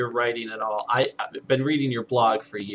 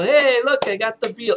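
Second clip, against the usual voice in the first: very high, loud, caricatured broken English; 12 semitones higher, 5 dB louder than usual. Speaker recalls the man at the small restaurant showing off the veal, imitating broken english. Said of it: "very broken English".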